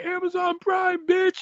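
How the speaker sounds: high, slow, yelled, taunting voice. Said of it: "Gangrel's like".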